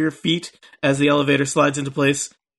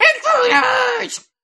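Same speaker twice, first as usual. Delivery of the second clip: shrill bird creature yell, very high shrieking. Voicing a strange bird creature that spots intruders: yelling bird creature. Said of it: "the strange bird creature next to you, Rizwin, yells".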